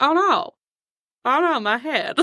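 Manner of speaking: clumsy put-on drawl, every word dragged very slowly. Retelling a shared reaction to a movie character: bad Christopher Walken impression. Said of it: "Charlie and I don't do really good Christopher Walken impressions".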